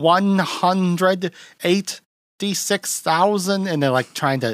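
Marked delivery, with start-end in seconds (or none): 0.0-3.7 odd put-on German accent, pitched up. Retelling a movie scene where an actor answers a question; weird German accent. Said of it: "saying it in like a weird German accent".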